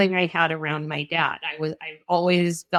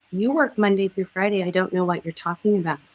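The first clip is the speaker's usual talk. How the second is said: quick, cold, dismissive brush-off. Retelling being dismissed when asking for time off, imitating Marissa's voice. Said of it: "Good imitation of the voice".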